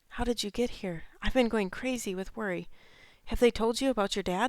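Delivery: hushed whisper. Reading a mother asking her son how he got here: whispering. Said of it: "She's whispering".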